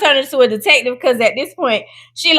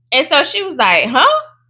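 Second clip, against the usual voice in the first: usual speaking voice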